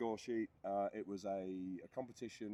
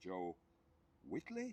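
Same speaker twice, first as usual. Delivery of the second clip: questioning rise on the final name. Retelling announcers naming a podium winner, questioning rise on joe whitley. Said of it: "they say it with a questionnaire in the voice".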